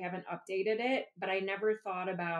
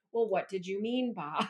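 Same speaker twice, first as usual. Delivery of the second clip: put-on snotty voice. Showing how the voice slips out in class: imitating a snotty voice. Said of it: "your really snotty voice".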